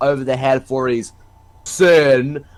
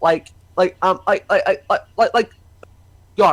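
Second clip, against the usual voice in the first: stuttering badly, getting stuck on words, higher pitch; 4 semitones higher than usual. Speaker describing someone they admire, stuttering badly. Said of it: "I keep stuttering so badly".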